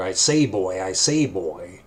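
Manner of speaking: low, very slow, drawn-out cartoon rooster voice. Recalling a rooster character from the Bugs Bunny show: cartoon rooster character voice. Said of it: "The rooster".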